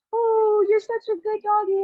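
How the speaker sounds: sweet, very high-pitched doggy talk voice. Showing how people talk when praising a dog, imitating a sweet voice. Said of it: "and they talk like this".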